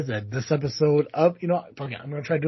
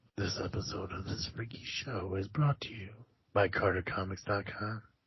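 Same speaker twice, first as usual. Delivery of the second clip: put-on creepy voice, much quieter; 7 semitones lower, 12 dB quieter than usual. Host brings back the creepy voice for the show's sponsor read. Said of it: "I'm gonna bring the creepy voice back".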